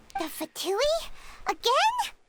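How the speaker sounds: taken aback. Hearing of yet more dealings with the Fatui, reacting surprised. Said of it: "Why do you sound so surprised".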